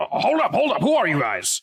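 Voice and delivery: very high, swooping yelling shout. Game master voicing a guard who calls after the running players: guard shouting. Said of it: "he shouts out after".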